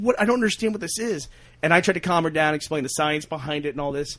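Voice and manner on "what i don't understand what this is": play-acted, high, tearful, mortified, confused crying. Retelling a mother's reaction on finding gasoline boiling: imitating mother crying, mortified. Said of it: "she was just, like, crying, like, mortified".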